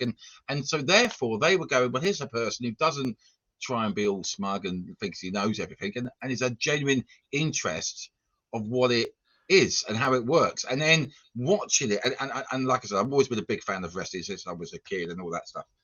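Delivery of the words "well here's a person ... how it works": ordinary delivery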